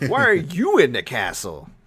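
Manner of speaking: outraged, affronted voice. Retelling a game scene, imitating Ethan indignant. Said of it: "Ethan was, like, indignant".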